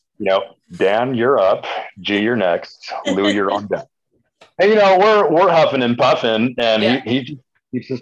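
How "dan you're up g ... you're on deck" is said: mock-soothing, put-on calm voice, pitched lower. A rider imitates the team DS calling out riders' turns, imitating J.R. Wolford's calm voice. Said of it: "he's got that really calm, soothing voice".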